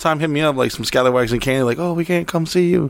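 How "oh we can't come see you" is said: high, botched fake accent, sort of Australian. Quoting people who message to say they can't visit, bad fake accent. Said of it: "What is this fucking accent?".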